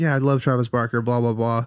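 ordinary talk

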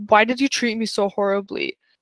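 imitated angry lashing out. Retelling a drama character lashing out at another character: imitating an angry outburst. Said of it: "she just kind of lashes out".

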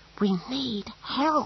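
very high, panicky, frantic half-whisper. Narrator reading Snibril's line to the hooded figure, in a frantic half-whisper. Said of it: "said Snibril in a frantic whisper".

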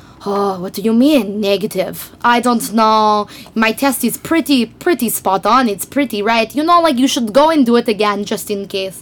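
put-on woman's Russian-accented English. Retelling what Lip Lady said when called back the next day: Russian accent. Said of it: "in her Russian accent, she goes".

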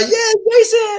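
excited cheering, high and loud.

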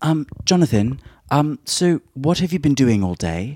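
put-on accent from Hampstead. Retelling what someone from Hampstead would say: imitating a Hampstead accent. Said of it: "a Hampstead accent".

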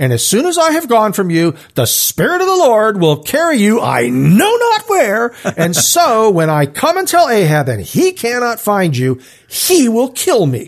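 high, sarcastic, indignant tone. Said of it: "I'm picturing this being sort of sarcastic".

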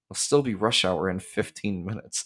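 low grumbling mutter, said as an aside. Retelling a scene as Sam turns and walks toward the ring: imitating Sam muttering to himself. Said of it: "he just mutters to himself".

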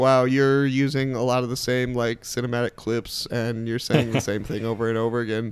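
plain

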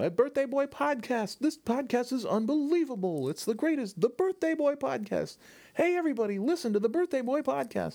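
mock shrill, very high-pitched, shrieking, screaming voice. Retelling screaming out a car window at people: imitating his own screaming. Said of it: "I just screamed out the window".

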